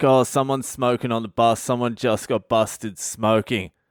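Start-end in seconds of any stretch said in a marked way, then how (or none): none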